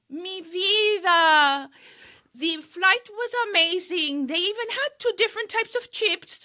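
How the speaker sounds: thick Colombian accent, vida drawn out. Reenacting a self-tape audition line, attempted thick colombian accent. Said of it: "I had to have a thick Colombian accent".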